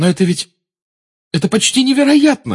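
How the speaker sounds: despairing cry. A girl responds to her friends' claim: exclaiming in despair. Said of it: "в отчаянии воскликнула Гермиона".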